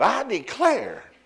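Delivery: high-pitched, declaiming Southern preacher voice. A speaker acts out someone who begins by sounding like a preacher; southern preacher voice.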